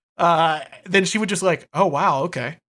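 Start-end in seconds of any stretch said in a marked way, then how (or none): 1.8-2.5 casual, unfazed, nonchalant, unbothered tone. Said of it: "she's just so nonchalant".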